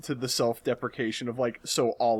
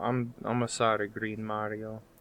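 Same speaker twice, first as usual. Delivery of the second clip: jokey, put-on Italian cartoon-style voice; 3 semitones lower, 7 dB quieter than usual. Playing a mother who forgets her son's name: Luigi voice. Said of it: "I was straight up just doing my Luigi voice".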